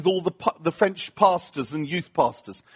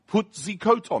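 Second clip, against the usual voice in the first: put-on French accent. Speaker retelling a man's repeated order about the coat, in a French accent. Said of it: "That's a French accent for you Americans".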